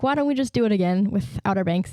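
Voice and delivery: normal talking voice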